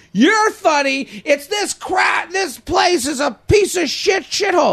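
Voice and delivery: very high, stretched-out, drawn-out yelling. Retelling how a girl being kicked out yelled into the room: imitating someone yelling. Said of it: "she starts yelling into the room".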